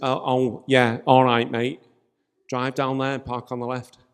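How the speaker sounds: put-on easy, offhand Mancunian accent. Retelling what the man at the front said when he pulled up; imitating a Manchester accent. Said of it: "Do you like that Manc accent?".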